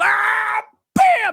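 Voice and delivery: mock very high, shrill, raspy, rough yell. Retelling how a friend reacted at a movie: imitating a loud friend's exclamation. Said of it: "He's just like".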